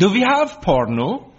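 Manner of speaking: put-on Danish accent. Retelling how the new au pair took the remote and asked, in her best danish voice. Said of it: "said in her best Danish voice".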